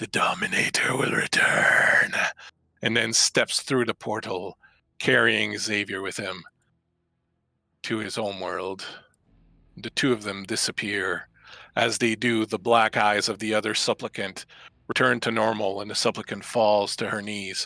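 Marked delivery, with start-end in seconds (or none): 0.0-2.1 whispered demon voice. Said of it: "and goes".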